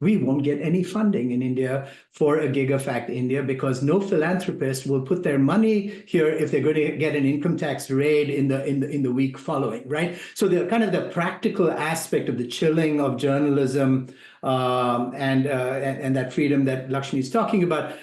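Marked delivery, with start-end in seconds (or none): none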